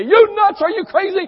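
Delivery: shrill, booming outburst, very high and loud. Acting out the fit he will throw over politics, with a raised voice. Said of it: "I'm going to raise my voice high".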